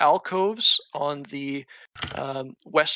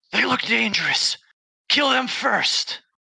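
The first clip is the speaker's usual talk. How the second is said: high, hissing, devilish creature voice; 7 semitones higher, 3 dB louder than usual. A devilish creature turns from its work to face the players: hissing devilish creature. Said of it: "devilish creature hisses".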